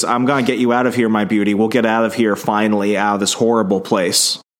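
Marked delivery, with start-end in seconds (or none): none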